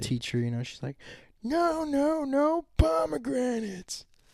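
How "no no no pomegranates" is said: very high, very slow, drawn-out acted freakout. Retelling a teacher's reaction in a video: imitating a teacher freaking out. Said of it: "stomping her foot, freaking out".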